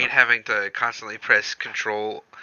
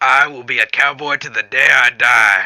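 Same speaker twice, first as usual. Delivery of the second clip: loud, bad cowboy accent, laid on heavy; 2 semitones higher, 8 dB louder than usual. Retelling what he kept saying, leaning into a terrible western cowboy accent. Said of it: "leaning heavily into the terrible bastardized Western accent".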